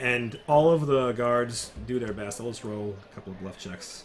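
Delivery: ordinary talk, nothing marked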